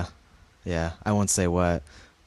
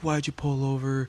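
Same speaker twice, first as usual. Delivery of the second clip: put-on, demanding, high-pitched, accusing yell; 7 semitones higher than usual. Retelling how he got out of his car at them: imitating someone yelling. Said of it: "yelling at us, like".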